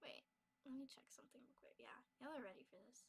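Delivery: soft, unvoiced whisper.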